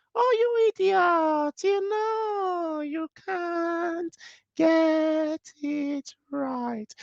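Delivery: very high-pitched, very slow squeaky voice. Demonstrating how to change a harsh inner voice, in a slow squeaky voice. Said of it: "slow it down and make the voice sound more squeaky".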